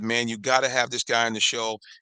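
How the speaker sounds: normal talking voice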